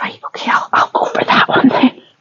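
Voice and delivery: resigned, defeated whisper.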